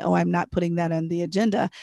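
plain

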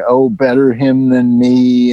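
ordinary talk, nothing marked

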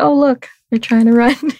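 relaxed, offhand delivery. Retelling what the spiritual advisor said as the creatures ran, imitating a chill remark. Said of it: "she said it like a really like chill".

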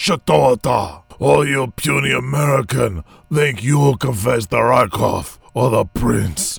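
botched, fake, raspy Russian accent. A player tries a voice for a character, in a bad russian accent. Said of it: "What kind of accent is that?".

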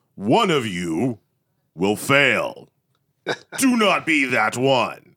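slow, booming, microphone-style announcer voice. Speaker recalls the address to the graduating class in an auditorium, booming voice over microphone. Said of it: "the booming voice over the microphone".

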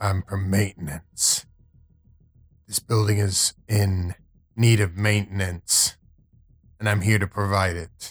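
growled character voice. A player voicing Hunter, stopped by guards at a side door, Hunter's growl. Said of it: "Hunter just kind of growls".

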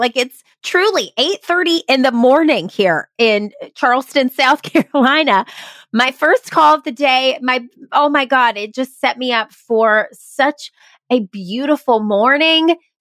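talking while laughing all through the words. Host thanking the guest after the episode's first call, laughing while speaking. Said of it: "I can't stop laughing".

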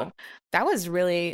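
usual speaking voice

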